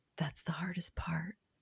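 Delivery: very soft, hushed, haunted tone. Retelling how a man being interviewed answered the off-camera question, retelling in a haunted tone. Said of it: "in the most haunted way".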